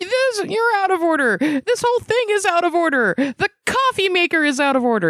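mock yell, pushed up high and indignant.

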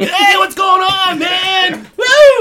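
loud, high-pitched, drawn-out hollering. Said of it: "You do a pretty good job".

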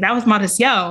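ordinary delivery

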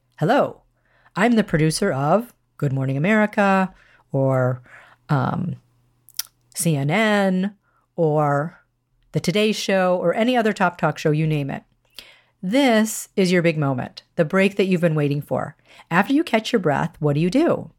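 ordinary talk

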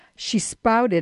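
usual speaking voice

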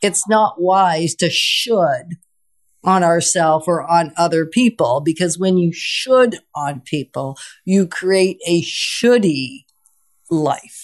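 slow, deliberate, careful delivery of every word. Restating the other speaker's words more slowly for listeners: said slowly. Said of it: "Thanks for slowing it down".

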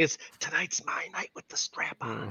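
hushed, breathy, secretive whisper. Retelling what a player whispered into someone's ear: imitating a whisper. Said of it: "she was whispering".

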